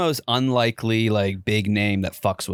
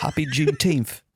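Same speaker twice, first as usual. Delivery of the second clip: put-on British accent, pitched up; 6 semitones higher than usual. Co-host signs off the episode to the other hosts in a british accent. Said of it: "Why'd you do it in a British accent?".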